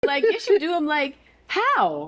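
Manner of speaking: high-pitched voice. Speaking in a conversation, voice going high. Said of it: "my voice going high".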